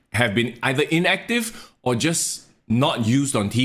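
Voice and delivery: ordinary talk, nothing marked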